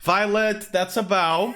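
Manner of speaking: cheeky, sassy, retorting tone. A game master voices Haj Dalgaar addressing a player's character, sassy Haj Dalgaar voice. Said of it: "he got sassy".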